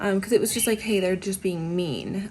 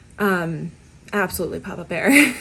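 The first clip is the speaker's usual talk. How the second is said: ordinary talk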